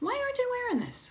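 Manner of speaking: loving, wondering voice, very high and soft. Demonstrating asking a question with curiosity rather than judgment, curious and loving. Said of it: "if you say the same thing curiously and with love".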